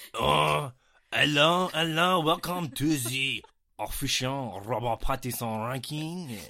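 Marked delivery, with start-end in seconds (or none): 1.1-6.4 put-on French accent. Opening a Robert Pattinson film ranking, put-on French accent. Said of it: "You want it in a French accent? I do".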